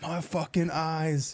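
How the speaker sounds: mock very high, freaked-out screaming shriek. Retelling how a man hit by fireworks started screaming: imitating someone screaming. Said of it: "he literally starts, like, screaming".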